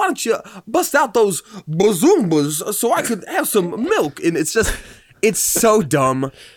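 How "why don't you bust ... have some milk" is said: put-on talking baby voice, higher pitch. Retelling a comedian's bit of a talking baby: Christopher Walken baby voice. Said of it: "his Christopher Walken baby".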